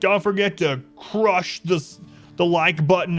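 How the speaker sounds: loud, high-pitched hype yell. Describing a video he quit watching, the speaker imitates its host, imitating a video host yelling. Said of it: "he was like yelling".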